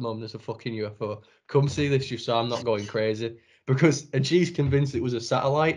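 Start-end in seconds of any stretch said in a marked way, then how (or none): none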